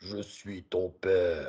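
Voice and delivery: very deep, very soft, slow, deliberate voice. Showing what a lowered voice does, a line in Dark Vador voice. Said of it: "c'est la voix de Dark Vador".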